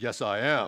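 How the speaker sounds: very deep put-on voice, forced way down. Retelling a son answering a cashier, imitating Caleb's lowered voice. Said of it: "Caleb lowers his voice like 2 octaves".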